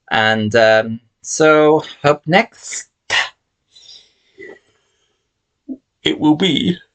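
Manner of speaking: high voice, words pushed out mid-yawn. Late at night on camera, introducing what comes up next, yawning while speaking. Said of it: "I'm yawning".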